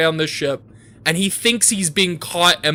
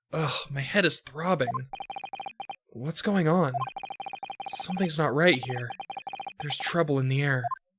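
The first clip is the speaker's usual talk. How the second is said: soft, hushed, surprised and startled voice; 10 dB quieter than usual. Playing the game aloud, voicing the protagonist as he wakes: surprised Ryunosuke voice. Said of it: "that's my like surprised protagonist voice".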